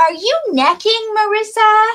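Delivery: shrill, very high, very loud, barging-in delivery. Retelling how mom opened the door and asked: imitating mom catching her. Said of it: "my mom opens the freaking door and goes".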